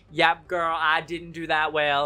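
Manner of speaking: bad, put-on, fake Southern American accent. Acting out a predicted reply, in a bad put-on Southern accent. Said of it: "That was my southern accent. And it was bad".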